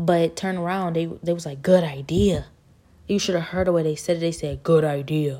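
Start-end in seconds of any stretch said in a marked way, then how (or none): 4.6-5.4 put-on deep, creepy voice. Quoting what they said to the speaker, deep, creepy voice. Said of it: "It's such a deep, creepy voice".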